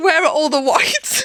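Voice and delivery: loud, carrying shout. Retelling hearing mum shouting from another room during a match: imitating mum shouting. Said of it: "I could hear my mum shouting".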